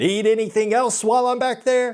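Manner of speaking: acted, clearly sarcastic tone. Quoting a woman who had to go check in the back, retelling a sarcastic remark. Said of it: "very sarcastically, she was like".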